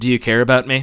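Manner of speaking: very low, loud, utterly flat mock deadpan. Retelling someone's joke reply to a question, mock-deadpan retelling. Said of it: "in like the most deadpan possible will just go".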